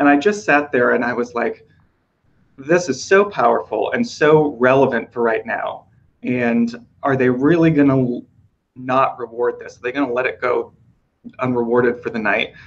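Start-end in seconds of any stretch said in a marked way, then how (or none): none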